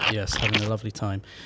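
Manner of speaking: heavily sarcastic, pointedly insincere tone. Answering a co-host who asks about the morning: sarcastic tone. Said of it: "That sounded very sarcastic".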